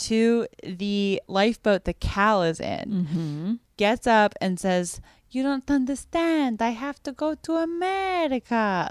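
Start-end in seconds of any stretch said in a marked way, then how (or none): 5.3-8.9 put-on Italian accent, pitched up higher. Retelling a film scene, speaking as Fabrizio to Cal in the lifeboat, Fabrizio's Italian accent. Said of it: "Like in his Italian accent".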